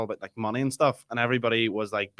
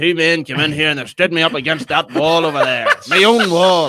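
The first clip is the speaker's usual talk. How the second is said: put-on loud, high, bitter old man voice. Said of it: "your guy Thomas the Tanker".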